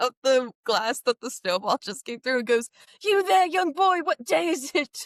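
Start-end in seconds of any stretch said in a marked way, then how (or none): 3.0-5.1 high-pitched voice calling out. Voicing a character calling out a window to a boy: Scrooge voice. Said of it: "sticks his head out ... and goes".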